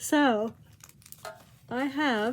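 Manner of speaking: tired, spoken mid-yawn. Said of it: "I'm yawning".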